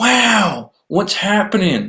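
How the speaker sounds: "wow" drawn out with pitch rising high. Opening a podcast episode in an Owen Wilson voice. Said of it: "That was my Owen Wilson".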